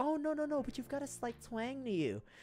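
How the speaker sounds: put-on high, soft little old-lady voice. Speaker retelling an old lady asking where they're from, imitating an old lady. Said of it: "when it's an old lady asking me".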